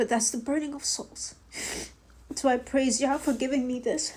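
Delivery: soft, tearful crying voice. Addressing Christians about the covenant with God, crying. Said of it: "I have no idea why I'm crying".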